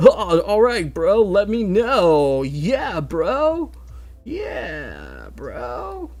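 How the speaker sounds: laid-back, high, swooping surfer dude voice. Explaining a drawing, the speaker notices sounding like a surfer and hams it up: surfer-dude voice. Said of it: "I sound like a surfer".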